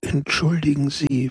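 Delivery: hushed whispering. A man speaking to Peppone, whispered. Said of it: "flüsterte er".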